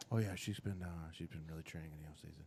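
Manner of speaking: hushed, very quiet half-whisper. Complaining about tennis broadcasts, imitating the announcers: imitating half-whispering tennis announcers. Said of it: "the goddamn announcers start whispering".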